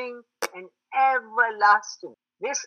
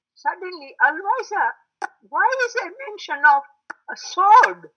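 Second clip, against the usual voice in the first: put-on high young person's voice. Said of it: "young people in the Jamaat have said".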